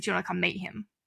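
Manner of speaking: put-on deadpan delivery. Teen retelling asking him if he wants to meet their dad, retelling a deadpan question. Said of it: "Like, deadpan".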